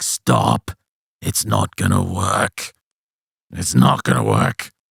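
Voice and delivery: very deep, slow, eerie, rasping creepy voice. Retelling what a possessed patient said: imitating a deep creepy voice. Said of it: "This deep, creepy voice".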